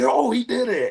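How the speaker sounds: play-acted, very high, thrilled shout of joy. Retelling a first moonsault as a parent watched, imitating someone cheering excitedly. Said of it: "you can see him in the corner popping".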